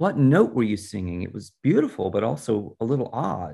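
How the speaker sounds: plain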